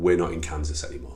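ordinary talk

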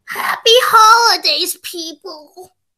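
fake, insincere, performed put-on voice. Saying goodbye to listeners for the holidays, in a fake put-on voice. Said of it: "Why do you have to use that fake voice?".

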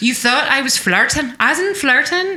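put-on Irish accent creeping in. A role-player speaking in character slips into an Irish accent. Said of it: "I'm Irish again".

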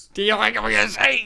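rough, creaky put-on voice. Repeating a line as an impression: Danny DeVito impersonation. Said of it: "That's my Danny DeVito impersonation".

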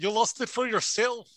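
put-on super thick, laid-on Irish accent. Retelling what Gunner replied, in Gunner's thick Irish accent. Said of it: "and his super thick Irish accent".

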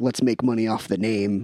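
ordinary talk, nothing marked

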